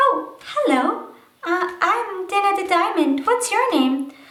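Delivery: put-on high-pitched puppet voice. Showing how a handmade puppet talks to another: Dana the Diamond puppet voice. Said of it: "And then they can talk to each other".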